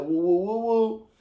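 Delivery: woo cries fired off in a rapid run. Explaining the woo Martin used to do versus their own: Martin's woo impression. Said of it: "I say woo like Martin".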